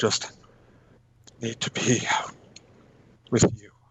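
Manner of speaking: put-on, husky kind of voice. Retelling what a man told the doctor about sick bay, in a husky voice. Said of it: "his voice is kind of husky".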